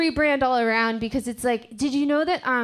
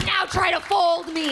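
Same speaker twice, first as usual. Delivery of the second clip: high put-on talking fitted sheet voice; 6 semitones higher than usual. Doing a comic impression of a fitted sheet: talking fitted sheet voice. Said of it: "this is an impression of a fitted sheet".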